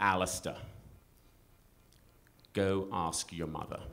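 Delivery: really deep, low-toned dad voice. A father retelling what he said to his son, in a really deep tone. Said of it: "I just said in a really deep tone".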